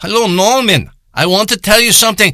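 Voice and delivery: put-on heavy Indian accent, laid on thick. Telling a story, imitating Rappa calling from the health department in a heavy Indian accent. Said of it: "he's got such a heavy Indian accent".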